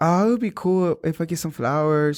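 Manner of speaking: voice put on for ladies. Imitating what certain ladies say about a relationship: put-on voice imitating them. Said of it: "I don't know why I'm doing the voice like that".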